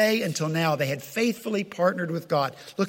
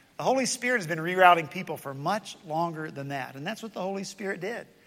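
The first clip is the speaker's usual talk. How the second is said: ordinary talk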